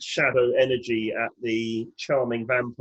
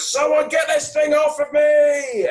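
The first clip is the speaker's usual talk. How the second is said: high-pitched shrill shout with "me" stretched; 6 dB louder than usual. Playing a character with a creature on them, calling for help: in-character shout. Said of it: "I'm gonna shout".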